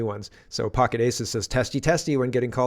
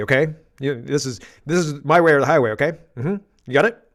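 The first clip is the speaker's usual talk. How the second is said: raised, practiced, firm tone that allows no argument; 2 semitones higher, 6 dB louder than usual. Imitating Mark Carney telling somebody it's his way or the highway: imitating Mark Carney's no-questions tone. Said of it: "that tone means you don't ask questions now".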